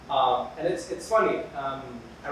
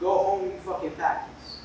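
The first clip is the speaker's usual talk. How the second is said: ordinary talk, nothing marked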